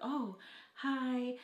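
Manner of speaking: self-conscious, awkward little tone. Retelling meeting the guys at the house: imitating an awkward greeting. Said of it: "Like, really awkward".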